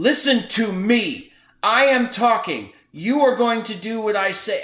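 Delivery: belligerent man's loud, high-pitched shout. Recounting a man who would not let them talk, the speaker is imitating a loud belligerent man. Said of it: "very loud and very belligerent".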